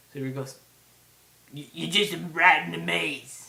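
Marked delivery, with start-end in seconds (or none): 1.5-3.5 rough, booming, drawn-out put-on film-character voice. Quoting a man's line from a film, impression of a film role. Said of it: "This is my little impression of him".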